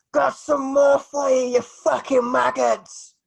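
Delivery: very high, very loud, ragged and rough bellowed roar. Narrator voices a figure calling down from the circle drop, bellowing. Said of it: "you hear a voice bellow".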